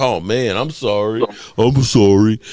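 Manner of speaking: slow, very drawn-out, put-on sad, sorry-sounding. Telling the other person how they could have reacted to her; mock-sad apology. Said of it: "you could at least look sad or something like".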